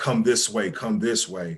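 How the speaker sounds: ordinary delivery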